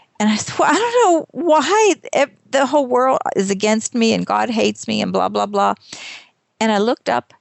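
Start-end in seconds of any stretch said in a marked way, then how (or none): 0.6-5.8 mock tearful, crying whine. Retelling what was said while stuck in a broken car, imitating own past tearful whining. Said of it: "I'm sitting there crying".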